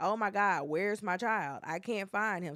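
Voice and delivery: plain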